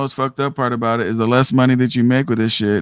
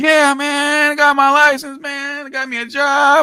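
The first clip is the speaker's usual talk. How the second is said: mock thrilled gushing, very high-pitched, boastful tone. Describing new hires after orientation, imitating excited new drivers. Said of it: "they see all you guys excited".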